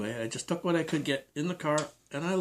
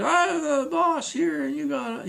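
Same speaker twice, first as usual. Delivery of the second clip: mock very high, slow, rasping, loud yell; 12 semitones higher, 6 dB louder than usual. Retelling how the manager yelled back at the speaker: imitating someone yelling. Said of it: "he started yelling".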